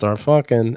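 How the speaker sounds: mumbling, muttering. Retelling a pitched TV scene where a character mumbles: mumbling. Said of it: "and then he mumbles".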